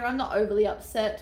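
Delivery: ordinary talk, nothing marked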